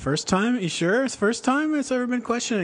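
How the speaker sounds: very high, quick, smirky, sarcastic tone. Recounting a cross-examination, the speaker acts out the questioning in a mock-sarcastic, smirky tone. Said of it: "kind of the sarcastic, like smirky".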